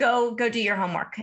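normal talking voice

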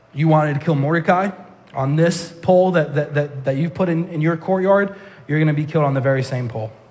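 ordinary talk, nothing marked

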